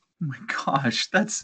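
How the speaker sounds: half-whispered, breathy, exasperated, frustrated laugh. An author talks about a book's edit, laughing out of frustration. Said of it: "I'm laughing out of frustration".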